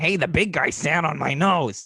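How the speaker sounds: high, screechy little voice. Speaker retells a child playing with a Gonzo doll: Gonzo impression. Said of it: "he actually does a little Gonzo impression".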